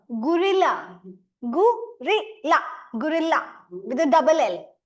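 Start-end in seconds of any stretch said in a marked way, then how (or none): 0.2-3.6 gorilla with the L stressed and drawn out. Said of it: "the emphasis is, is on L".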